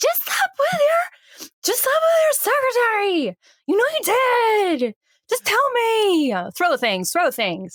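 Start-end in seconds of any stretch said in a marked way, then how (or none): 0.0-6.3 high, slow, drawn-out accusing voice. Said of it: "She's like".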